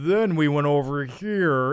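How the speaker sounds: slow, flat, deadened monotone put-on American accent. Showing how foreign actors overdo an American accent, weird monotone voice. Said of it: "it's like this weird monotone sounding voice".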